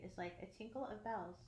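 plain reading voice

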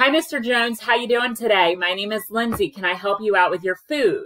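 loud, projecting voice. Showing how she greets hard-of-hearing customers, loud projecting voice. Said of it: "I'll talk to you now how I talk to".

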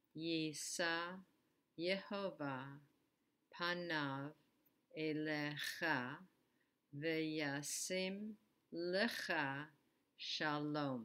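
slightly slow, paced-out Hebrew reading, word by word.

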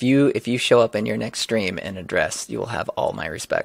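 ordinary delivery

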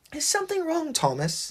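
very high, soft, drowsy, sleepy mumble. Exhausted Percy asks his friend Thomas a question, mumbling. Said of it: "he mumbled".

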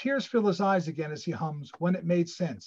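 ordinary delivery, nothing marked

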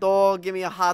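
put-on New Jersey accent. Asked about the accent they're supposed to have, a speaker shows it in a Jersey accent. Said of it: "That Jersey accent".

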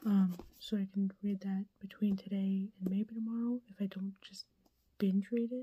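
quiet, hushed voice. Recording a quick video intro while a stepmom is on the phone: speaking quietly. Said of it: "I'm being quiet".

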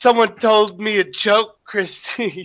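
slow, drawn-out, high-pitched character drawl. Retelling a skit's impression of Steve Shives complaining to Christy: imitating Steve Shives. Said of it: "Steve Shives impression".

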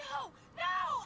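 panicked screaming. Refusing as a character trapped in a depressurizing chamber: screaming. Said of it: "Stop screaming".

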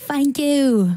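jokey put-on Cockney accent. Introducing a tune off the new album: Cockney accent. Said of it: "[name]'s a Cockney".

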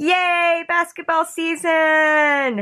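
big, high, loud, slow drawn-out cheer.

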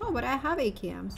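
ordinary talk, nothing marked

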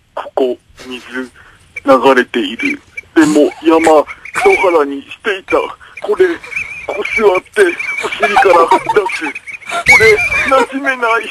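bewildered, confused monster voice. Doing a requested impression of a monster newly come to town, confused monster impression. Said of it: "山との違いに戸惑う化け物のモノマネ".

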